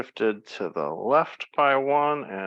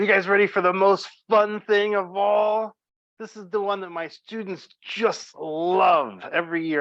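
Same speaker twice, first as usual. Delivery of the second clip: mildly sarcastic fake enthusiasm, love drawn out; 9 semitones higher, 4 dB louder than usual. Introducing a topic students complain about, a little sarcastic. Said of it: "I'm being a little sarcastic here".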